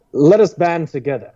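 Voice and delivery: put-on British accent. Telling a funny story about a conspiracy theory, quoting its speaker in a british accent. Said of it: "I love to use a British accent for the story".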